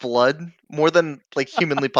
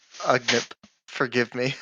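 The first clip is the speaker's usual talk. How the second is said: low, soft, hushed half-whisper; 4 semitones lower, 9 dB quieter than usual. Acting out a scene, leaning down to the badly hurt Ugnip: half-whispering. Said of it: "and I'll whisper back".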